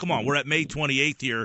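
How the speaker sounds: normal talking voice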